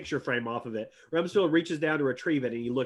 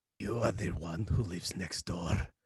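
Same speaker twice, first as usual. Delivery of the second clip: low and gravelly voice; 9 semitones lower, 8 dB quieter than usual. Uncle Reuben walks right up to Ray and speaks, in a low, gravelly voice. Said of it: "speaks in a low, gravelly voice".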